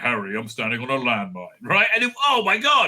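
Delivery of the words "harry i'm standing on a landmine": deep voice, full of power. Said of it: "so much power in that voice".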